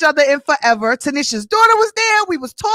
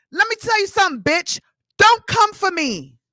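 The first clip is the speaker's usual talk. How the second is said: heated, ranting, loud angry yelling; 2 semitones higher than usual. Telling off someone who came for her after her daughter was harassed; yelling. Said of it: "Yes, I'm yelling".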